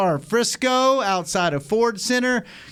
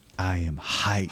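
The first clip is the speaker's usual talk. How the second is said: put-on quiet, flat voice, lower and quieter; 12 semitones lower, 6 dB quieter than usual. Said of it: "because he goes".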